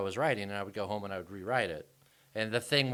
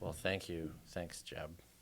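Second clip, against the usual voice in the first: whispered deadpan, hushed, no expression; 5 semitones lower, 11 dB quieter than usual. A guest thanks the host for a compliment; deadpan. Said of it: "you going with the deadpan thing".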